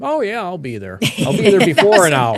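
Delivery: high, lilting, sing-song voice. Retelling how a storm-chase companion answered a call: Paul voice. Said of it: "That's a good Paul voice".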